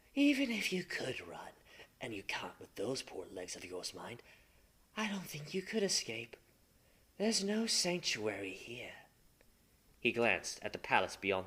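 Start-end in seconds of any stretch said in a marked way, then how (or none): 0.2-9.0 mild, soft, gently spoken. Narrator reading Fulgrim's words to the crawling Marius: Fulgrim, spoken gently.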